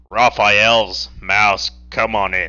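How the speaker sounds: deep, low, slow put-on character voice. Narrator voicing Gabriel calling through the door, Gabriel's low voice. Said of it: "I can't do the low voice consistently".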